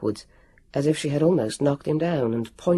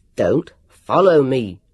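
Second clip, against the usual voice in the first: loud, unreasonable-sounding shout; 3 semitones lower, 6 dB louder than usual. At the top of the stairs he swings round, shouting unreasonably. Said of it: "he shouted unreasonably".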